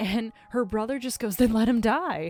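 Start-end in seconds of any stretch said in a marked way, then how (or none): 1.4-2.3 mock cheery, carefree, happy, raised pitch. Retelling a brother's reply to his sister: imitating someone saying it happily. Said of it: "he says it so happily".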